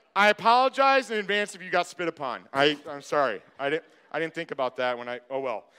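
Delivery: ordinary delivery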